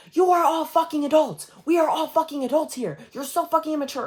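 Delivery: play-acted, very high, shrill screamed outburst. Recounting screaming at others after getting off a bus, retelling a scream. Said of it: "I started screaming".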